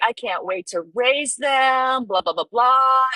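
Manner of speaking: acted-out thrilled, eager, excited, high gushing chatter. Retelling how a friend showed off her sea monkeys: imitating someone excited. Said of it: "And she was so excited".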